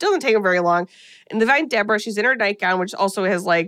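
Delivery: ordinary delivery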